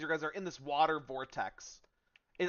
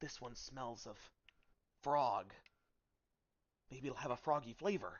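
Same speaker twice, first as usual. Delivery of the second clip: hushed, whispered musing to oneself; 3 semitones lower, 7 dB quieter than usual. Voicing a gnome chef picking mushrooms in the bulrushes: whispering gnome chef. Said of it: "you're gonna hear him whisper".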